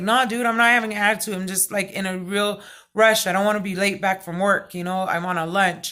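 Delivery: ordinary delivery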